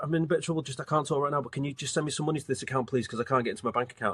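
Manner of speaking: fast, urgent, distressed pleading. Acting out a scam call where an AI voice clones a daughter; imitating a distressed plea. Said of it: "a distress tone".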